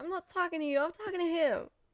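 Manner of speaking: put-on laid-on New York accent. Speaker, not from New York, recalls the accent coming out of Trinity: Trinity's New York accent. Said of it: "sounded very New York".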